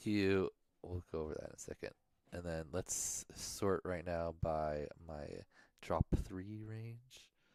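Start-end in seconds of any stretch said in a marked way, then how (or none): 2.3-7.3 soft, slow mumbling to himself. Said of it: "You need to speak up and quit mumbling to yourself".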